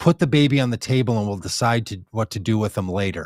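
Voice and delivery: ordinary talk, nothing marked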